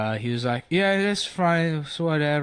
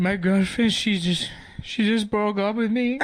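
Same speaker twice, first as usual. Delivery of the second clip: put-on tearful man's voice, higher pitch; 7 semitones higher than usual. Retelling what a tearful stranger said about his breakup: imitating someone tearing up. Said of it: "tearing up".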